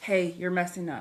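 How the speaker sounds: ordinary delivery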